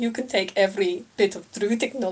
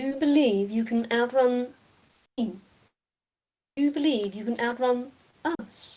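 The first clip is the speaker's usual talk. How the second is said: almost incredulous, disbelieving tone; 4 semitones higher than usual. A narrator voices the figure replying to Lore, with almost disbelief. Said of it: "an almost disbelief in that voice".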